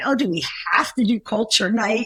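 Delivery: ordinary delivery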